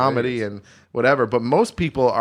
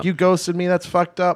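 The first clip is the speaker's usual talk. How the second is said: mock yelling; 7 semitones higher than usual. Retelling how a woman yelled at you at a bar; imitating her yelling. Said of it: "she's yelling at me at the bar".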